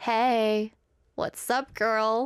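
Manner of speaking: laid-back casual dude voice, very slow, hey stretched out. Imagining what the guitar would say if dated: voicing the guitar as a casual guy. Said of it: "And the guitar would be like".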